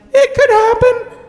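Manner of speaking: very high, small, mournful, sad voice. Acting out a little inner voice in the head: imitating a very quiet sad voice. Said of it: "It was very quiet and very sad".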